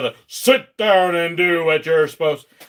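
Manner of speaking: loud, strict, stern dad voice. A chaperone showing how he scares kids into behaving, dad voice. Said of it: "I've got the real nice dad voice".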